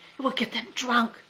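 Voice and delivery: sharp hissed delivery. A narrator reads the general's reply to Tubtum, hissing. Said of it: "the general hissed".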